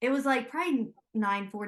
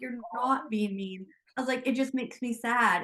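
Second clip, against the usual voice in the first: ordinary delivery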